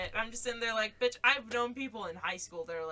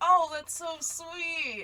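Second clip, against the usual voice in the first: put-on forced sweetness through clenched teeth, pitched up; 8 semitones higher, 4 dB louder than usual. The speaker retells their own past reply, said through gritted teeth. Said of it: "I say through like gritted teeth".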